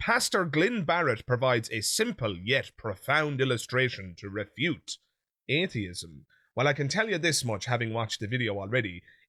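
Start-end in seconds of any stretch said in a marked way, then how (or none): none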